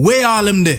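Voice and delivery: loud Jamaican yardie accent, long ah in Harlem. Showing how a real yardie would ask it, Jamaican accent. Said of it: "A real yardie would have say something like".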